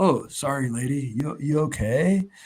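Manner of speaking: mock very slow, easygoing, laid-back chill delivery. Retelling a comic scene, voicing the hero: imitating a chill, laid-back character. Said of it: "the most chill, laid-back character".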